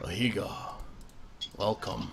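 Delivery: very quiet, breathy, hushed, whispered elder dragon voice. Narrating a scene, voice the dragon as it looks down and speaks: elder dragon voice. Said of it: "an elder dragon voice".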